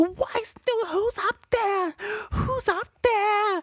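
very high, stretched-out, drawn-out breakdown screaming. Retelling a horror film scene: imitating someone screaming. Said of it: "She was screaming at the top of her lungs".

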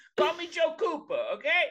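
very high, animated, swooping put-on character voice. Joking as a movie character: Joe Pesci voice. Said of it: "I'm Joe Pesci's Bradley Cooper".

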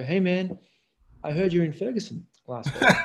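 laid-back, mellow, easygoing delivery. Reminding a guest how he once greeted the speaker: imitating a mellow voice. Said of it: "in your very kind of mellow way".

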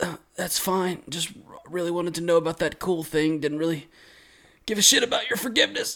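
weak, feeble, dying voice. Acting out a demon's last words as his head disintegrates: weak dying Kyogai voice. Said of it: "says, weakly".

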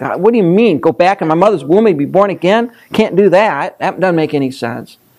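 ordinary talk

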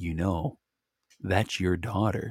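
hushed, half-whispered stage whisper. Retelling half-whispering into someone's ear at bedtime: retelling a half-whisper. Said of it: "I whispered in her ear".

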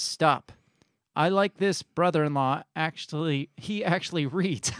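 plain

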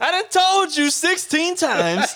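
mocking, high, slow, drawn-out, exaggerated whine.

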